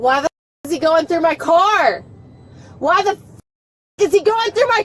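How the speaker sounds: mild yelling, exclaimed like a scream. In a repetitive back-and-forth with another speaker, screaming. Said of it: "you screaming?".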